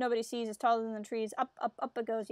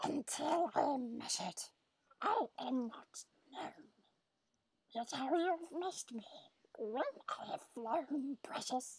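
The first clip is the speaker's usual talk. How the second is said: riddling cave-creature voice; 3 semitones higher, 8 dB quieter than usual. Reading a riddle aloud to viewers: Gollum voice. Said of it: "I will do it in my Gollum voice".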